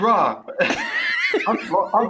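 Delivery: high, loud, laughing, dismissive rant. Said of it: "and I was like".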